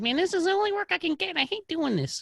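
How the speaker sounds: very high, squeaky cartoon voice. Retelling what a man playing an elf at Christmas said, bad SpongeBob voice. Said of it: "my bad attempt at a SpongeBob voice".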